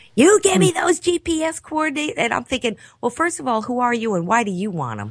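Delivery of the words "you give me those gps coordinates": mock yelling, high screaming, demanding tone. Recounting a 7 a.m. phone call from Chuck Modlin, imitating Chuck Modlin screaming. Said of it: "he's screaming at me on the phone".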